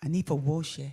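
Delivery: imitated Nigerian accent. Coaching someone to repeat a phrase, in a Nigerian accent. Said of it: "You sound like a Nigerian now".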